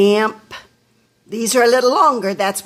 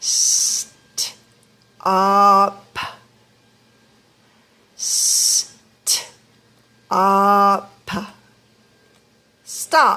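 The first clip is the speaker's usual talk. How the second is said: very slow, sounded out in pieces, sound by sound. Teaching the sounds in a word, the speaker says it in slow motion. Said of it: "Let me say it in slow motion".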